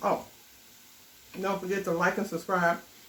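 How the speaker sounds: speaking through a mouthful. Signing off a cooking video to viewers, the speaker talks with mouth full. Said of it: "I'm talking with my mouth full".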